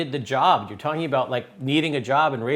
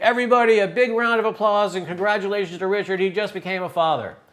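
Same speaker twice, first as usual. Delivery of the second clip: high, shouted, announcing scream; 6 semitones higher than usual. Retelling a coworker's lunch announcement about a new father: retelling a scream. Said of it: "jumped up on the table and screamed".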